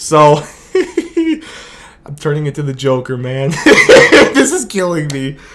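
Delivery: talking through helpless laughter, words broken up. Speaker on camera reacts to a team making him lose his mind, laughing while talking. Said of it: "I can't stop laughing for some reason".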